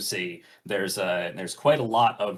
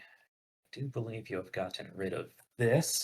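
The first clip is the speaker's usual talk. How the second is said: quiet muttering, words running together, indistinct; 2 semitones higher, 7 dB quieter than usual. Game master speaking to a player while checking on their stress: mumbling. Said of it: "Sorry, I'm mumbling".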